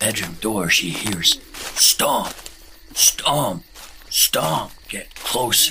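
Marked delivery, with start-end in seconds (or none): none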